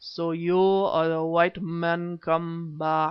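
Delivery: heavy, thick, throaty, guttural, slow, drawn-out voice. A narrator reading a novel voices the figure on the ground: thick, guttural voice. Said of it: "it spoke in a thick, guttural voice".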